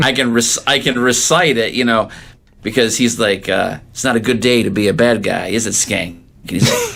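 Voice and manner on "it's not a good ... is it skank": usual speaking voice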